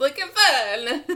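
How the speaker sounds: put-on high Italian accent, "fun" stretched out. Speaker tries saying the phrase again, this time in an Italian accent. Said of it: "Trying to say it in an Italian accent".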